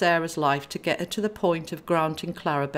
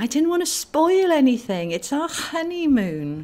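defensive, pitched-up tone; 8 semitones higher, 4 dB louder than usual. Narrating a woman answering a concerned companion, defensive. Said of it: "she defended".

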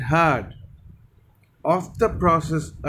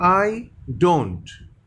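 ordinary talk, nothing marked

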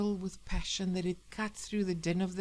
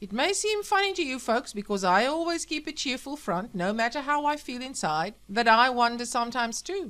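loud, high, bellowing voice like a radio address; 5 semitones higher, 6 dB louder than usual. Sam speaks to his listeners over the radio, bellowing. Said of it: "bellowed the radio".

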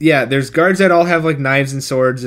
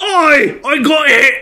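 very high, very drawn-out, slow fake Scottish accent; 12 semitones higher, 4 dB louder than usual. Imagining the actor trying again after a Shrek hint, imitating Nicolas Cage doing a Shrek Scottish accent. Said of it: "think, like, Mike Myers and Shrek".

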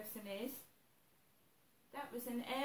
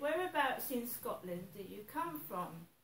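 usual speaking voice

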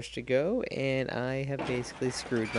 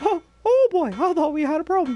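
put-on cartoon mouse voice, higher and louder; 10 dB louder than usual. Speaker continuing a bit about scaring someone, in a Mickey Mouse impression. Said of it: "my Mickey Mouse impression".

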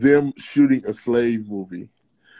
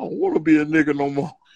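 ordinary talk, nothing marked

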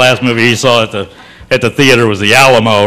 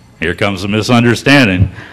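plain

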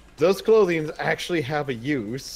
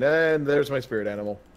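ordinary talk

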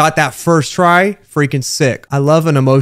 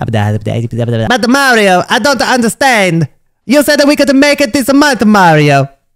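high, swooping, sing-song cartoon sidekick voice; 7 semitones higher, 4 dB louder than usual. Redoing a friend's line after saying that's not how he sounds, in a Luigi voice. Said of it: "Let me voice Luigi in this".

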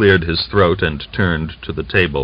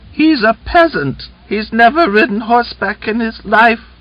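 lisping, very high-pitched falsetto. A Cossack mocks the Red Army man, pretending to be a half-wit, lisping falsetto. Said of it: "lisped in a falsetto voice".

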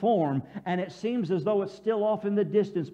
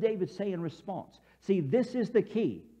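plain

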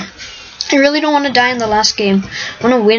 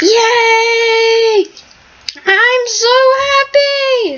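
high, way-too-happy, overjoyed cheering; 12 semitones higher than usual. Player celebrating their team's win in a game, way too happy. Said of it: "I'm way too happy right now".

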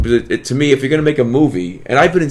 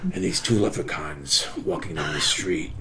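put-on oddly serious, weird delivery, lower and quieter; 8 semitones lower, 12 dB quieter than usual. Retelling starting a joke off camera to get reactions: imitating a very serious, weird delivery. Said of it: "I do it really serious and really weird".

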